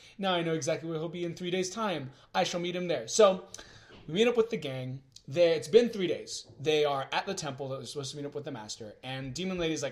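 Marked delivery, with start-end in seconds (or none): none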